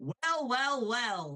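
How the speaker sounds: high, slow, drawn-out character drawl. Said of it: "and then as Bill, I'll go".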